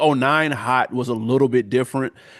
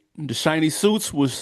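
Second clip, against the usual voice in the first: plain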